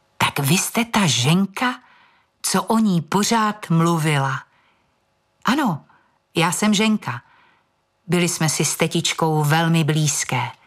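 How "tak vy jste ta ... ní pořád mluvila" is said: subdued, restrained, muted, discreet tone. A clerk asks the woman's niece her next question, in a hushed voice. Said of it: "další otázku už pronese tlumeným hlasem".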